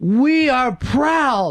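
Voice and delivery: yelled out, high and light. Retelling a stupid dream, the speaker quotes a man yelling to a happy crowd; retelling a yell. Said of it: "he yells out".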